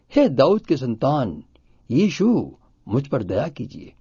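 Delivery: ordinary talk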